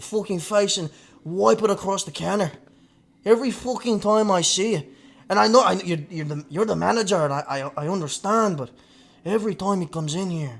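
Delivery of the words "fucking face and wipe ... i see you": bad fake Irish accent, much higher pitch. Retelling what he told a man whose order he took, in a bad Irish accent. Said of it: "my Connor's dog shit".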